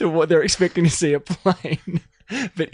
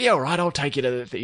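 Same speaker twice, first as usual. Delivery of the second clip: put-on Cockney accent, faster pace; 3 semitones lower than usual. Retelling a favorite movie line from the old mechanic friend, Izzy's Cockney accent. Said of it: "Is he Cockney?".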